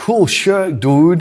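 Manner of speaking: horrible fake American accent, loud. Retelling a man's comment in a penthouse lounge, in a horrible american accent. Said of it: "in an American voice".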